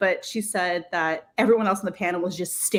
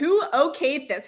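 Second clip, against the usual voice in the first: mock yelling, higher pitch; 8 semitones higher than usual. Retelling yelling at the makers of a TikTok: imitating own yelling. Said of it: "I literally started yelling at them".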